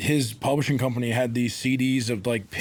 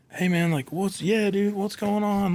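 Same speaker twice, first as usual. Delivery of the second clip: put-on excitement, much higher; 8 semitones higher than usual. Retelling a guy busting through a parking lot after the awards, imitating him excited. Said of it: "he's like so excited".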